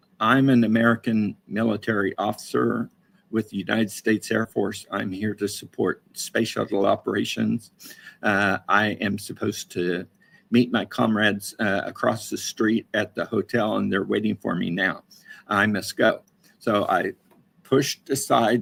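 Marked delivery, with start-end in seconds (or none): none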